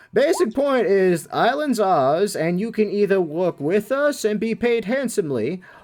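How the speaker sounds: high, slow, drawn-out goblin voice.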